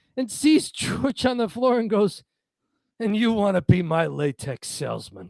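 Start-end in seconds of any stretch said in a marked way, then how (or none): 3.0-5.3 scornful, unimpressed, disdainful tone. Retelling a sitcom scene where Jerry finds George on the floor: imitating Jerry's disdain. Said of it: "It's just the disdain".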